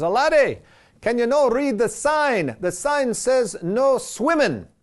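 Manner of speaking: put-on slow, drawn-out Irish accent, high pitch. Storyteller voicing an older gentleman warning a boy in a lake, irish accent imitation. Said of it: "my best Irish imitation".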